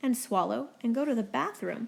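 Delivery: plain reading voice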